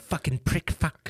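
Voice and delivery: quiet, angry fake Irish voice. Showing how drunk Irish people sound, doing a mock-angry McGregor drunk rant. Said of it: "You sound like a bit like a leprechaun".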